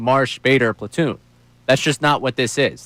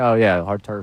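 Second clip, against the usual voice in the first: flat put-on monotone voice, pitched lower; 4 semitones lower than usual. Imitating the reason given for the move: monotone Thompson voice. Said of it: "just that real monotone driving".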